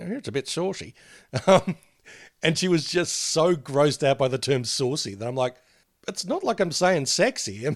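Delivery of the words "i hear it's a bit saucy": put-on deliberately affected old man voice, pitched up. Retelling a remark made to her, in a put-on old man voice. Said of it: "deliberately sort of putting on the old man voice".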